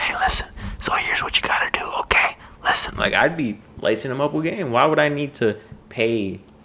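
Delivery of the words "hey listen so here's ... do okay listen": secretive, breathy whisper. Imagining whispering advice to a baby still in the womb, whispered. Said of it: "I'm gonna be in there whispering like this".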